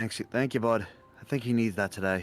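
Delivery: low, soft half-whisper. As Henry, speaking to the dog Sirloin, half-whispering. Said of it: "He kind of whispers to Sirloin".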